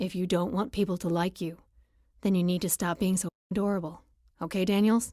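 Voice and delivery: completely earnest, dead serious voice, no joking. A narrator reads a man's line as he leans in close to her, dead serious. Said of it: "says in a dead serious voice".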